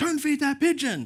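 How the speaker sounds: very high, shrill, high-pitched yell. Retelling how a stranger yelled at you and your wife, imitating a person yelling. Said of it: "there was a person yelling at us".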